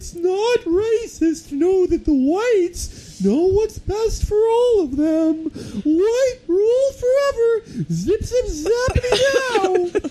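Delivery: very high, squeaky cartoon-character voice. Retelling how the speaker read a letter aloud, cartoonish voice. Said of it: "I just read it in that cartoonish voice going".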